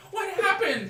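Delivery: high, loud, frantic goblin-voice yell. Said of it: "yelling at the other stall".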